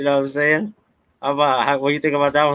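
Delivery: high, heavily sarcastic, mock-admiring tone.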